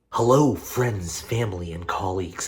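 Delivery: speaking very quietly. Recording late at night while roommates sleep, speaking really quietly. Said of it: "I'm being really quiet right now".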